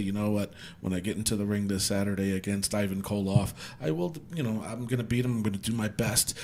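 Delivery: quiet, mild, soft-spoken voice. Retelling how a wrestler gave interviews: imitating Bob Backlund's soft-spoken interview voice. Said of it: "he was just so soft-spoken".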